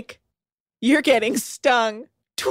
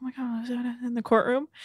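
mock whisper, quieter; 8 dB quieter than usual. Imagining a courtroom scene, people reacting to new evidence: imitating courtroom whispering. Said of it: "They'll be all that whispering".

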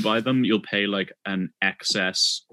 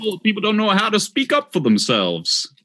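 exaggerated old-timey American accent, very high and loud; 11 semitones higher, 5 dB louder than usual. Trading accent attempts with friends, in a foghorn-like american accent. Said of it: "you sound kind of like a that foghorn".

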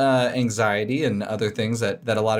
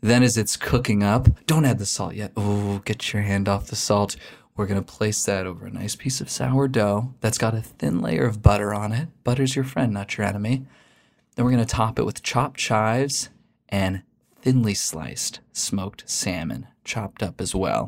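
teasing, playful mock-seductive tone; 2 semitones lower than usual. Walking through a slow scrambled-egg recipe in a mock-seductive voice. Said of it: "Let me do this seductively".

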